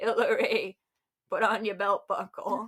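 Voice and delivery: slow, trembling voice. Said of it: "when we do impressions of him".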